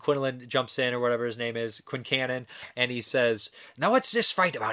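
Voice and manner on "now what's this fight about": put-on thick, heavy Irish accent, pitched up. Recounting a movie scene where Quincannon breaks up a fight; Quincannon's thick Irish accent. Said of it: "He's got this thick Irish accent".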